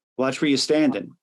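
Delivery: normal talking voice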